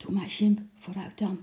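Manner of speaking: mumbled, coaxing tone. Reading a character urging another toward a trumpet-playing clown, muttered. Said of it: "mompelde Lotje".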